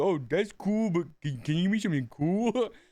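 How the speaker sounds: blank, flat, expressionless delivery. Retelling how a player blankly answered horrific visions: imitating a player's blank reply. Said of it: "In that exact voice".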